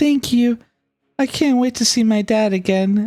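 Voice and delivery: very high-pitched, beaming, smiling voice. A game master's character thanks the player who promised to help, smiling thanks. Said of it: "She nods and smiles".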